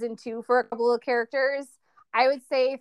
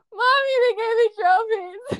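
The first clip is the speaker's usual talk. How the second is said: mock very high little-kid sobbing happy tears; 10 semitones higher, 4 dB louder than usual. A mother recounts her daughter coming home with trophies, imitating a child sobbing with joy. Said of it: "literally sobbing, pure joy".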